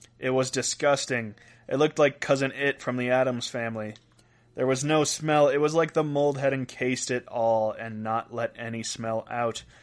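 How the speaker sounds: normal talking voice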